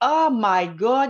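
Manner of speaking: loud, slow, awed voice. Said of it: "ça a fait comme".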